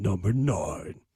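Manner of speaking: sexy, sultry, very low voice. Asked to give the number in a sexy voice, answering in a sexy voice. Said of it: "in a sexy voice? I'm like".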